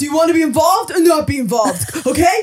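mock, high-pitched hollering, like yelling. Retelling what the partner asked about the ring, imitating partner yelling. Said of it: "just yelling at people".

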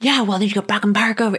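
furious, enraged woman's voice, losing control. Retelling a confrontation while getting her kids out of the car, imitating a woman losing it. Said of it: "she was losing it".

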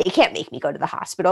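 sarcastic, defiant, dug-in put-on tone. Retelling what was said to the other speaker: mock sarcastic defiant tone. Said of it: "I'm being, like, sarcastic and defiant".

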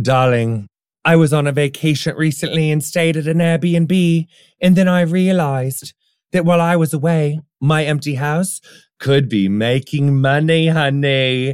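put-on British accent with a different timbre.

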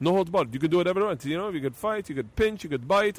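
horrible, laid-on, clumsy put-on Brazilian accent. Retelling a man's words while discussing the UFC, in a horrible Gracie accent. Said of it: "I'm doing a horrible accent of a Gracie right now".

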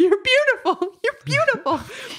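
play-acted tearful sobbing outburst, very high pitch. Speaker retelling seeing a hawk in a tree outside their window, retelling sobbing and screaming. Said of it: "I was crying and sobbing and screaming".

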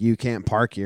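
ordinary talk, nothing marked

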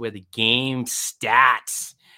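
loud New England accent, "starts" said as "stats". Reading a betting ad's slogan, in a new england accent. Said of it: "And I use that New England accent".

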